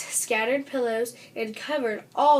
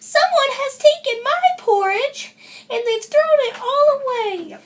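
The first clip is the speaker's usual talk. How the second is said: wee squeaky cry, shrill, high and loud; 14 semitones higher, 8 dB louder than usual. Narrator reading Baby Bear discovering the mess in the sink, in a wee little voice. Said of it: "cried in his wee little voice".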